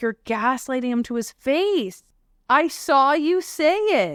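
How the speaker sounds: play-acted light screaming tone, high and held back. Retelling a tv scene where one person screams at another: imitating someone screaming. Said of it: "screaming at him".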